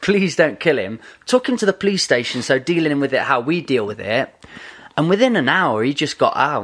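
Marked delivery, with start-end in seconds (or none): 0.0-1.0 put-on pleading voice. Retelling a carjacking to another speaker: retelling a plea. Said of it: "we were just pleading for about half an hour".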